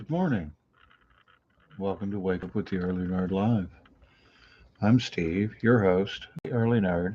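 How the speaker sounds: quiet, hushed voice at soft, low volume. Host opens his early morning live show without waking the house, talking quietly. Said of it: "I'm talking quietly because if we wake up Missus Early Nerd".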